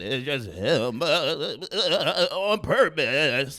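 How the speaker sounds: fake trembling voice. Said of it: "shaky voice".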